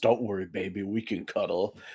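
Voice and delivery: low, dropped creature voice. Voicing a character popping out of a dumpster: in character as Boogie. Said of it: "pops out of it and goes".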